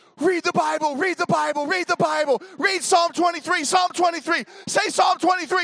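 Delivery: shrill, very high, top-of-the-lungs panicked screaming. Retelling screaming at a sister while fearing death, retelling a scream. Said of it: "and I'm screaming".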